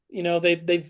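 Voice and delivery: ordinary delivery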